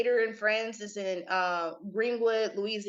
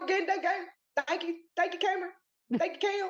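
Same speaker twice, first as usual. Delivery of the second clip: exaggerated mocking impersonation, higher pitch; 9 semitones higher than usual. Imitating the other speaker's way of saying thanks, exaggerated impersonation. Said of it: "I'm just exaggerating".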